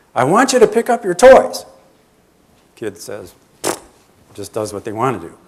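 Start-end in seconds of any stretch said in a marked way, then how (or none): 0.2-1.7 very high, shrill, loud yelling. Acting out a parent telling a child to pick up toys: imitating a yelling parent. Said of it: "Parent starts yelling".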